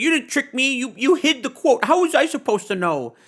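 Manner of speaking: mock, very high-pitched, worked-up furious voice. Retelling a commenter's reply to a tweet: imitating someone angry. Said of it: "he got super mad".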